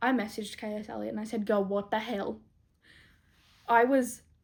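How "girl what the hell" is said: ordinary talk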